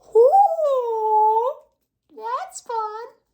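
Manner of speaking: loud voice breaking very high on drawn-out "ooh". Reacting to the news that Eldraine is back, voice cracking. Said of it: "Voice crack".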